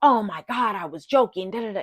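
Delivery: very defensive, dismissive, loud protesting tone. Retelling how another person usually reacts: imitating someone super defensive. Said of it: "usually when he gets super defensive".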